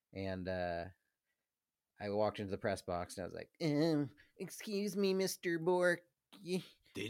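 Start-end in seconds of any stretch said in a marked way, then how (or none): 3.6-7.0 awkward dorky voice, higher. Retelling walking into the press box to ask for an autograph: imitating own dorky fan request.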